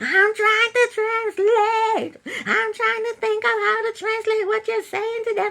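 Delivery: put-on, very high, weepy crying voice. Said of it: "She starts to cry".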